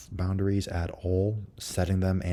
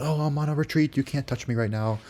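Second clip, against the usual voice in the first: put-on worked-up, emotional voice, high-pitched; 7 semitones higher than usual. Showing an overly emotional way of setting a boundary: emotional. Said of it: "all emotional and be like".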